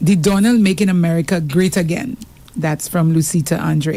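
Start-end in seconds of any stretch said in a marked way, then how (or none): none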